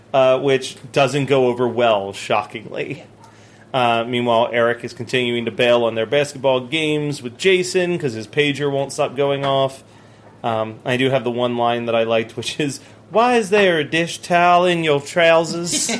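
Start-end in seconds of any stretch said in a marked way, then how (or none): 13.1-15.9 put-on Southern belle accent, high-pitched. Recapping an episode, quoting a favorite line, Southern belle accent. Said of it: "only works in the Southern Bell accent".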